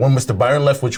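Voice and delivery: ordinary talk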